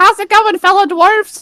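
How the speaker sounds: obnoxiously high-pitched voice. Imagining someone walking into a meeting after sucking helium: obnoxiously high-pitched voice. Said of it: "an obnoxiously high-pitched voice".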